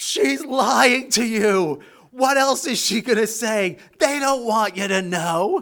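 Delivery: high-pitched yell. Retelling standing behind her and calling out to the crowd, retelling own screaming. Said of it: "I'm behind her screaming to the crowd".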